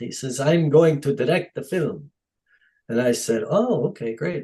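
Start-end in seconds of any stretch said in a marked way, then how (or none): 0.4-2.1 put-on Dutch accent. Quoting the man who put up money for the film, in a Dutch accent. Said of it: "in his Dutch accent".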